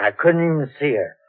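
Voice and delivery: ordinary delivery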